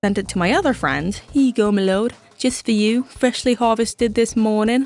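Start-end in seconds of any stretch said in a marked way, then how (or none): 1.3-4.9 put-on olden English boy voice, higher pitch. Retelling presenting a friend with a gift: olden English boy voice. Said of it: "framing it as an olden English boy giving a nobleman a gift".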